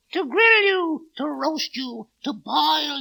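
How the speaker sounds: puppet devil voice. Voicing the devil in a puppet show, threatening the princess: puppet devil voice. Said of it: "I am the devil".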